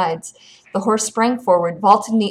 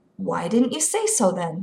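plain

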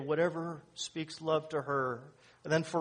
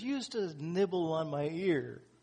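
mock, light, gently jesting, playful teasing tone. Telling a joke about a long-married couple, the wife in bed: imitating a playful teasing tone. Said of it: "with a little jest in her voice".

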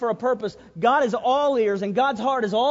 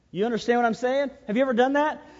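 ordinary talk, nothing marked

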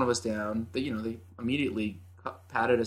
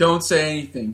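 yelling, higher and louder; 5 semitones higher, 8 dB louder than usual. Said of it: "just starts yelling".

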